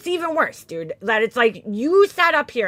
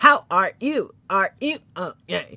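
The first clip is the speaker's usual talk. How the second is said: low, slow, awkward, mechanical robot voice; 4 semitones lower than usual. Mocking a woman's awkward greeting: imitating Laura sounding robotic. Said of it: "Sounds like a fucking robot".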